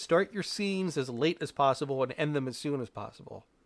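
ordinary talk

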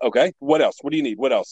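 mock-impatient, rushed, put-on impatient tone. Retelling a phone call where the store's owner pressed him; mock-impatient, rushed.

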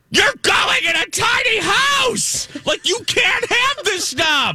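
very high, shrill screaming yell. Retelling watching a tiny-house show, the speaker re-enacts screaming at the TV. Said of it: "And I'm screaming at the TV".

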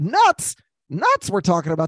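animated put-on voice swinging high in pitch. Doing an impression while starting an ad read: Jim Mora impression. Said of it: "That was my Jim Mora impression".

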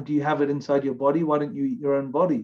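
ordinary talk

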